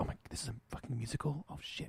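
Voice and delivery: very soft, shocked whisper under the breath. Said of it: "like that whispering going on".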